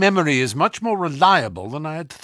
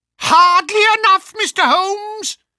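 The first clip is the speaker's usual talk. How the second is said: very high, louder, furious screaming shriek; 6 dB louder than usual. Reading a detective story aloud, the old man blocking the door: high, screaming voice. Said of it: "the old man cried in a high, screaming voice".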